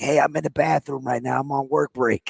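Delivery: secretive, hushed, quiet stage whisper. Retelling a caller who phoned in from the bathroom: imitating someone half-whispering. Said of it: "He's, like, whispering".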